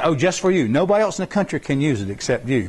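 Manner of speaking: ordinary talk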